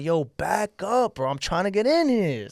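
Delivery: very slow, stretched, drawn-out mild yell. Recalling security pushing the crowd back, retelling own screaming. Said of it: "And I'm screaming".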